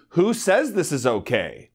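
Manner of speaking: ordinary talk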